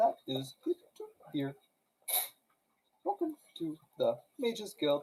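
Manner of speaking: put-on, borrowed voice of a bird creature. Playing the bird person at the Mages Guild front desk, in a mimicking bird-person voice. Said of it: "Do a voice".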